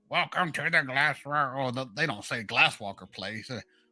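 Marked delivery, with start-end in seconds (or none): 0.1-1.1 small, mechanical, automated robot voice. Recalling a building's automated greeting, the speaker does the little robot voice. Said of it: "just hear that little robot voice talking to you".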